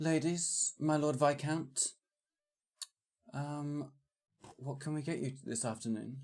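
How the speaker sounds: polished, soft, posh put-on waiter's voice. Restarting a scene as a server: posh waiter in character. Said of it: "Shall we take all take a deep breath and start again?".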